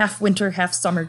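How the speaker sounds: usual speaking voice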